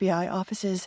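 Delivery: ordinary delivery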